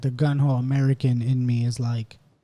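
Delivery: ordinary delivery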